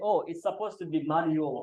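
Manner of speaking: ordinary talk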